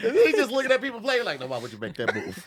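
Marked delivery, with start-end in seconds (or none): 1.4-2.4 mock patronizing, know-it-all, talking-down tone. Imitating a friend asking chess players about moves: imitating condescending questioning. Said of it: "asking people condescendingly".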